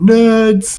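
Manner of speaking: high, loud yell. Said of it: "while yelling".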